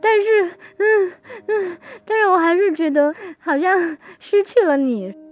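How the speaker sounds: speaking through tears. Retelling what the speaker said while walking in the yard with the other person, retelling speaking while crying. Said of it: "我就哭着说".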